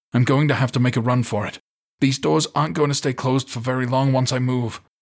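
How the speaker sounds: huffing and puffing. Ethan, behind the others, tells them his plan to run for it, huffing. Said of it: "Ethan huffed from behind them".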